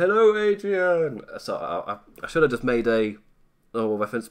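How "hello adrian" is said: very high, loud, belted-out call. Greeting a viewer from the chat: Rocky voice. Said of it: "I just did a Rocky thing".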